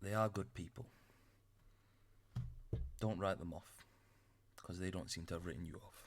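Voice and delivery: hushed voice. Voicing a character who leans over to whisper to Shafrat: whispering. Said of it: "just whispers in your ear".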